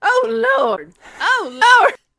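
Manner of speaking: high-pitched, loud, belted Southern drawl. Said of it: "she said it loud".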